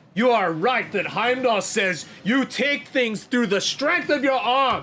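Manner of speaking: high, loud, furious, upset tirade.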